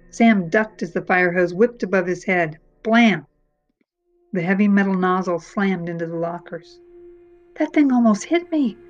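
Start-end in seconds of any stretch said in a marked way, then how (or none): 7.5-8.7 high, gasping outburst. Sam, after ducking a fire hose that slammed into the lockers, gasped. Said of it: "Sam gasped".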